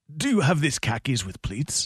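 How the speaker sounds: barely there, faint put-on Spanish accent. Asked to try a line in an accent, attempting it again: attempted put-on accent. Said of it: "There was barely an accent on that".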